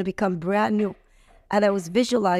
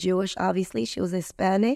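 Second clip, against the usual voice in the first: ordinary talk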